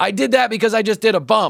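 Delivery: shrill, very high, yelled call. Retelling what a stranger called out after snorting: imitating someone yelling. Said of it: "And then he yells".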